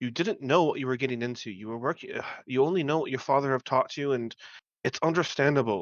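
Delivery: hushed voice. In a role-play, a character speaks to a young man he calls son: lowered voice. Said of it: "I'm going to lower my voice".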